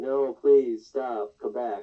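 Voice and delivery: loud, insincere, flat, drawling sarcastic tone. Retelling a film scene, imitating Willy Wonka: sarcastic Willy Wonka line. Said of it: "like a sarcastic".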